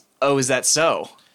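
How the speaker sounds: said with an audible wicked grin. Voicing a character who realizes something, said with a wicked grin. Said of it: "with sort of, like, a, a wicked grin".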